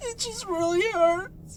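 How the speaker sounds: tearful sobbing. Being interviewed about a former band partner who left; sobbing.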